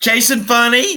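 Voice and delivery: said really loud. Introducing oneself at the start of a review: said really loud. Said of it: "you said that really loud".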